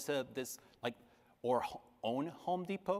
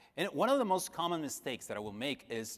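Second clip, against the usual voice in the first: ordinary delivery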